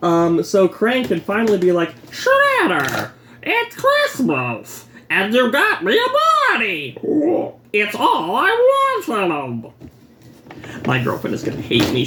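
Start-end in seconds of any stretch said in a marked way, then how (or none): 2.1-9.7 goofy cartoon voice, high, swooping, stretched very slow. Opening a toy, speaking as Krang to Shredder in Krang voice. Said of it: "She hates hearing me do the Krang voice".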